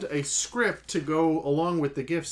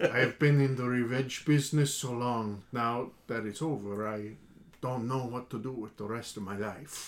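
put-on Spanish accent, lower and quieter; 4 semitones lower, 5 dB quieter than usual. Acting out a film scene with a partner; Inigo Montoya Spanish accent. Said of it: "Spanish accent for that one".

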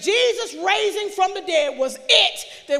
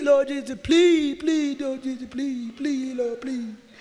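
mock, acted pleading, begging tone; 5 semitones lower than usual. Preaching about how we pray to God, acting out mock begging. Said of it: "Begging God".

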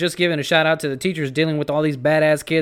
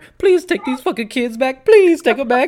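shrill, very high, loud, begging tone; 9 semitones higher, 5 dB louder than usual. Joking about begging the governor: mock begging. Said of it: "we're just all begging the governor".

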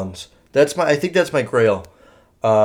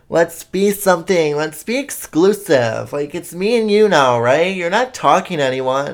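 put-on clingy, pushy girl voice. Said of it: "they're like".

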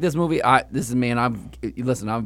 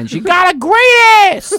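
shrill, booming bellow, drawn out, slow, high and swooping; 10 dB louder than usual. Retelling an open-mic comic's bit: Al Pacino impression. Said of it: "an impression of De Niro, of, uh, Pacino doing".

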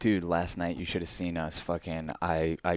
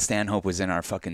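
plain

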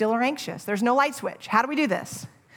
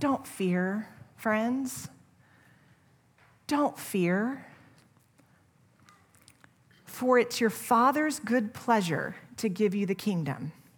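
put-on gentle loving voice, quieter; 4 dB quieter than usual. Retelling a verse as Jesus speaking to his followers: voicing Jesus speaking gently and lovingly. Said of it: "intimately and gently and personally and lovingly says".

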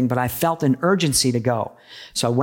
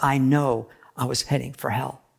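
put-on whisper; 4 dB quieter than usual. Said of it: "he whispered to me".

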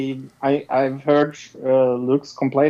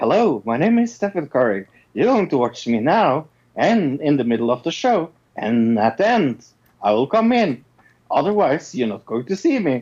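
flat, lifeless public-service-announcement delivery. Retelling a show's opening PSA bit: imitating Stephen Curry's deadpan delivery. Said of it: "it was very dead, dead-handed delivery".

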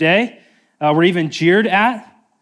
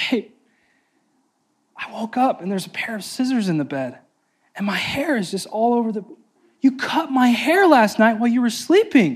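put-on crying with fake sobbing; 5 semitones higher than usual. Retelling how a woman calls her partner at work, imitating fake crying. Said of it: "and she's crying, fake crying".

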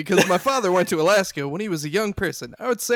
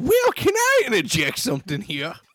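sudden, swooping, put-on Louisiana Southern accent; 4 semitones higher than usual. Interjecting in a put-on Louisiana Southern accent. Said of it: "He's just from Louisiana all of a sudden".

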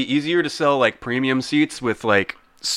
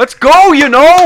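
shrill, booming, excited Canadian accent, very high, loud; 12 dB louder than usual. A speaker who said they can't do it attempts an excited Canadian voice. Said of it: "that was actually pretty good".

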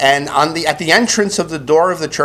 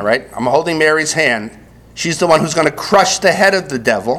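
ordinary delivery

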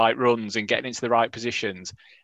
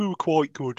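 far-off put-on Welsh accent. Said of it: "I thought, didn't know Welsh".

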